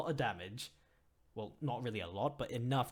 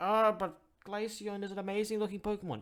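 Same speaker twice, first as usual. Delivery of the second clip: weird mocking voice, very high and loud; 11 semitones higher, 5 dB louder than usual. Ranking Pokemon, mimicking people who would defend Glaceon: weird mocking voice. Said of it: "I apologize for that weird voice".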